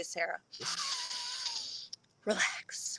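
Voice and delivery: soft whispered self-calming tone.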